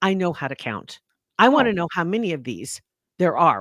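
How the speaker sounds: mock condescending, snapping tone. Retelling how a woman snapped while the speaker counted out loud, mock-condescending snap. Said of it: "she snaps in a condescending voice".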